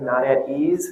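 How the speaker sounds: EASE stressed with a rising tune.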